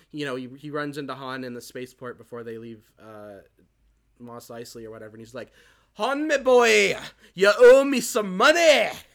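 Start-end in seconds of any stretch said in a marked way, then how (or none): 5.9-8.8 put-on booming, high, slow, loud Scottish accent shouting. Retelling a deleted scene where Jabba confronts Han: Scottish accent as Jabba the Hutt. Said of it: "why do I feel like he had a Scottish accent?".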